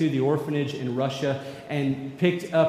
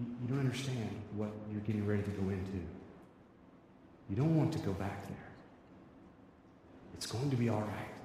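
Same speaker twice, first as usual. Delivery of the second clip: whispered, hushed and barely audible; 5 semitones lower, 13 dB quieter than usual. Retelling words whispered to two crying boys leaving an orphanage: imitating a whisper. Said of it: "he was whispering something like".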